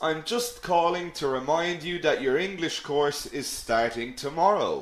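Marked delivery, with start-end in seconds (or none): none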